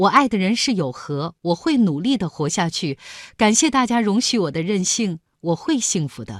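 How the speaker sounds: normal talking voice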